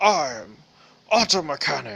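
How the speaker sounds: mock everyday speech pushed like an intense yell. Retelling how a guy kept screaming at them; imitating intense yelling. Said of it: "just yelling was just like his talking voice".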